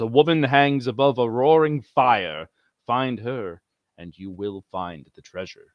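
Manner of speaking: deep voice dropped way down low. Retelling a story, the speaker voices the Necromancer in a deep booming voice. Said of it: "he says in a deep, booming voice".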